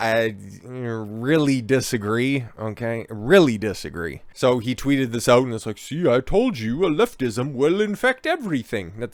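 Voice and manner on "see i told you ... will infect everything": bad put-on British accent, pitched up. Quoting another person's tweet, in a terrible British accent. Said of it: "That's a terrible British accent".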